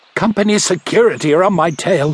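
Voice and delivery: words gasped out on a breath. A driver crouching in the bushes answers the doctor, gasping. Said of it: "he gasped".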